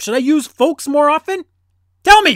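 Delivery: full-on, shrill, very high, very loud yell. Speaker puts a question to the listeners, yelling. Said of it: "I didn't mean to yell".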